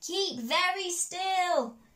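high, loud shout with full force. Narrator reads Big Rabbit calling to Small Rabbit on the hilltop, shouting as loudly as possible. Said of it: "she shouted as loudly as she could".

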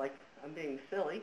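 normal talking voice

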